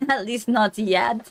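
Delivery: put-on Russian accent. Playing a character asked whether they may kill someone, Russian accent. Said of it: "the Russian's back".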